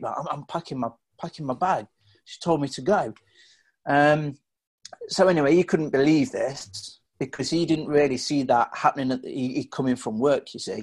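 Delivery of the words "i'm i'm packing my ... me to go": distressed, flustered, stumbling and repeating words. Retelling their childhood answer to their dad: imitating own distressed past self. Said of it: "in a state".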